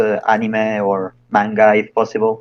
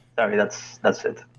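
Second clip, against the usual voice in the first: ordinary delivery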